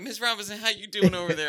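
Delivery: very high, loud, put-on extra-friendly voice. Retelling greeting a guest at the pool: imitating own overly nice tone. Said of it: "I'm acting nice".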